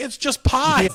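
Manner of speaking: frantic, shrill, loud screaming outburst. Retelling shouting on the phone that he's scanning pie: imitating screaming. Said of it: "we're just screaming".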